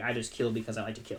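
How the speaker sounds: usual speaking voice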